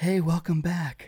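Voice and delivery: serene, soothing, very calm tone. Retelling how a man greeted them as he opened the hatch, retelling a very calm voice. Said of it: "in a very calm voice, he goes".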